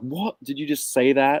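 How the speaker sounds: stunned, shocked, disbelieving reaction. Retelling how Chloe reacted to hearing a vote: imitating Chloe's shocked reaction. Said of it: "She's so shocked".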